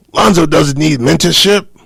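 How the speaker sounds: very loud, high-pitched, belted sports-dad voice. Repeating to a fellow speaker what the player's father says, in a Lavar Ball voice. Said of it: "in my Lavar Ball voice".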